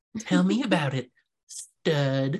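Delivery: high, slow, dramatic delivery. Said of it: "sounded like, uh, [name] in Grease".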